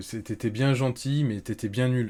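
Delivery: ordinary delivery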